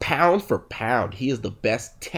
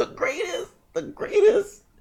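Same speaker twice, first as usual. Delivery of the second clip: put-on wheezing voice. Telling a story about your father, you imitate how he sounds when he is praising someone, wheezy voice. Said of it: "He always sounds like he's wheezing".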